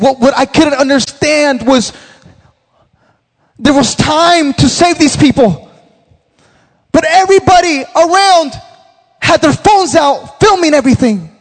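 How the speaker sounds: play-acted anguished voice. Telling a pastor about a newsman describing a deadly car crash, imitating his anguished voice. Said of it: "you can hear the anguish in his voice".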